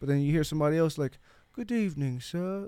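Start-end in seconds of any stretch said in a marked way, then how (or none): 1.5-2.7 put-on upper-class posh English accent, pitched up. Discussing how people talk, giving an example of someone in a posh English accent. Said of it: "it's a completely posh".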